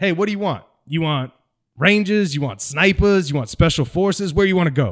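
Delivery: put-on North Carolina accent. Retelling what a drill sergeant asked, imitating his north carolina accent. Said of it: "He's got this North Carolina accent".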